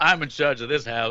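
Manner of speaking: mock proud tone. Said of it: "You said that so fucking proud".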